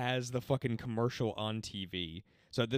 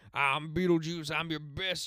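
put-on Southern salesman voice, higher; 6 semitones higher than usual. Retelling a TV ad scene, imitating Beetlejuice as Southern cowboy salesman. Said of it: "dressed up as, like, a Southern cowboy salesman".

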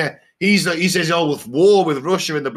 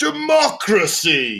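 swooping, refined, noble British lilt; 2 semitones higher than usual. Discussing soldiers fighting for democracy, saying the word like Obi-Wan. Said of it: "can I say it like Obi-Wan?".

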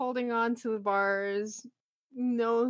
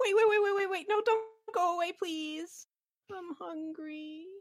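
high, begging, pleading goblin voice; 7 semitones higher than usual. Voicing a caged wailing goblin begging the party not to leave: pleading goblin. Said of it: "As you guys start looking like you're losing interest".

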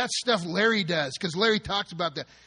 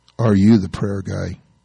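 very low, deep, loud, looming, booming voice; 12 semitones lower, 10 dB louder than usual. Retelling a young man calling out from the shadows, imitating a deep voice. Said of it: "I hear this deep voice".

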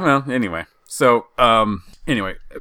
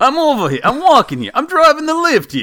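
fake Jersey accent, very high and loud; 6 dB louder than usual. Asked to do a jersey accent first, put-on new jersey accent. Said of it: "Now I'm in the zone".

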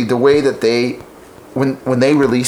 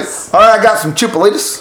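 fake country accent, pitched up; 8 semitones higher, 4 dB louder than usual. A server acts out calling spanish dish names to a table in a redneck accent. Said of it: "with a redneck accent".

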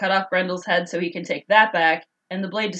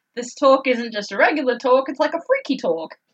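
bad fake New Zealand accent, pitched up; 6 semitones higher than usual. Talking about films with another speaker, in a horrible New Zealand accent. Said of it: "me doing that horrible accent".

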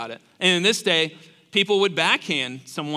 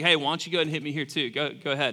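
mock snarky, cheeky, sassy sarcastic tone; 4 dB quieter than usual. Acting out a sarcastic reading of being slapped: put-on sarcastic and sassy. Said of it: "This sounds kinda sarcastic and kinda sassy".

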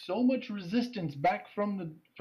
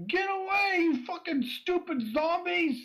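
shrill, very high, furious shout; 12 semitones higher, 4 dB louder than usual. Voicing someone inside a locked room yelling at the zombies outside: angry yelling from inside. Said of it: "you hear a voice inside. It says".

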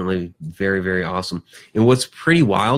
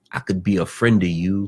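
put-on creepy movie voice. Recalling a Shawshank Redemption scene, in a mock-creepy Shawshank Redemption line. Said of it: "just the way he says it is like really creepy".

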